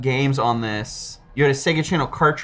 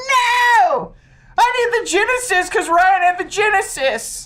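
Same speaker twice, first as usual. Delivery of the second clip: put-on acted very high, tearful kid voice, drawn-out "no"; 3 dB louder than usual. Retelling crying in a toy store at twelve: imitating own childhood crying. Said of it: "I started crying".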